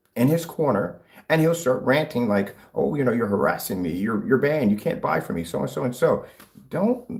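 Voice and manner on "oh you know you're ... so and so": ordinary delivery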